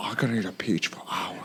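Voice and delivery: breathy, near-silent whisper in a put-on voice. Showing how the peach line should sound: Nicolas Cage impression. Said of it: "That was good".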